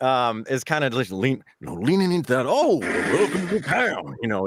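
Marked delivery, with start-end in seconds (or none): 2.5-4.2 put-on slow, higher, brighter, friendly old-timer voice. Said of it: "just that older, but brighter, friendlier kind of voice".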